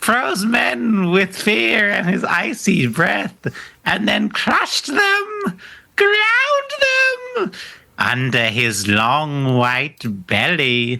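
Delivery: eerie, creepy storytelling voice. Reading a passage aloud to the group as requested: creepy voice. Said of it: "I want you to give me a creepy sort of voice".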